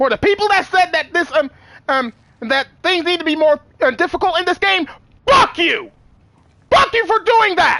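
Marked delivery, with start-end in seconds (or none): 5.3-7.8 furious, angry yelling. Complaining about people who wanted the game harder: furious yelling. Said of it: "I'm visibly shaking of how angry I am".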